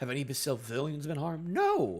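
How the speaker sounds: ordinary delivery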